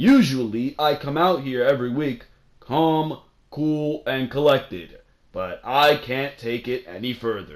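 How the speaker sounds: boring, rote, dull, acted-out scripted-sounding delivery. Mocking a wrestling promo, repeating the lines: imitating Kurt Angle's monotone delivery. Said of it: "can you be any more monotone and boring than that".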